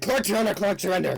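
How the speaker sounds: high-pitched, panicked, rushed, rattled-off words. Voicing a character in a game who turns to the players, panicking. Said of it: "like panicking".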